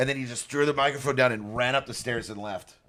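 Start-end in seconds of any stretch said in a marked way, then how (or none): none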